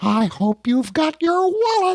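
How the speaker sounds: squeaky voice, pitched way up high. Podcast co-host joking about Disney World parties, in a Mickey Mouse voice. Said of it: "I could do my Mickey Mouse voice".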